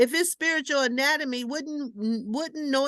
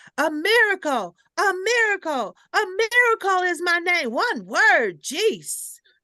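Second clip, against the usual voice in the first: put-on exasperated screaming, high, loud and fed-up; 5 semitones higher, 5 dB louder than usual. Retelling how a woman answered when asked her name, imitating someone screaming. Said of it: "She just started screaming at me".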